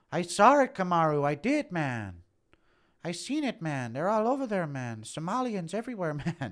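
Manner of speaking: high, loud, slow, drawn-out, insistent voice. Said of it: "Impression of Pseudo".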